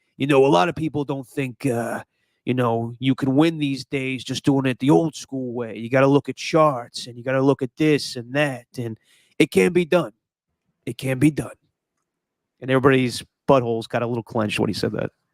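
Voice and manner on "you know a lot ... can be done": sportscaster voice holding forth with a mob-boss tone. Retelling a moment in front of Farhan: Chris Berman impression. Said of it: "Berman goes".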